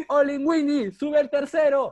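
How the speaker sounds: very high shouted holler. Retelling how people on a rooftop shouted to call him up, retelling a shout. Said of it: "Me gritan".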